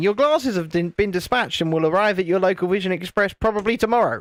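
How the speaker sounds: normal talking voice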